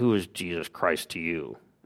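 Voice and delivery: quiet, gruff, growled voice. Retelling the drill sergeant's first question to the speaker, retelling a growl. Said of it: "growled out".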